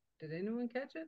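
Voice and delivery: fast, rattled-off babble. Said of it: "the words are just coming out so fast".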